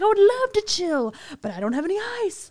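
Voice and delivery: freaked-out, very high voice. Retelling a woman yelling in the building, imitating her freaking out. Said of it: "she was just like really freaking out".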